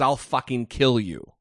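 ordinary delivery

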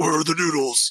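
flat-toned, slightly muffled hero voice. Asked to do your Batman voice while finding a proper voice for him, Batman voice. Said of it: "Do your Batman voice".

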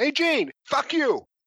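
shrill, piercing, very loud high-pitched yell. Retelling a loud yell on an airport train: imitating Bobby Heenan yelling. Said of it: "really loud".

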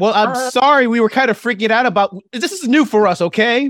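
high-pitched, shrill shouting. A player's character, freaking out, yells at a ten-year-old girl. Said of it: "I'm yelling at a 10-year-old girl".

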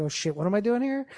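normal talking voice

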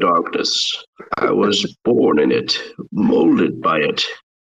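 muffled voice like a movie villain. After saying they won't even attempt it, the speaker does a Bane impression. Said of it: "Sounds like you got it".

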